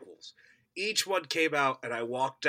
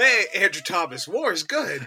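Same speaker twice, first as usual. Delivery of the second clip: loud, high-pitched promo-style intro voice; 5 semitones higher, 7 dB louder than usual. Joking about how a friend would edit a promo: imitating Andrew Thomas. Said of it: "that's how your good friend Sam Bannigan cuts your voice".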